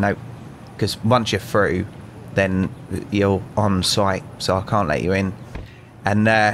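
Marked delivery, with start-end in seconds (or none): none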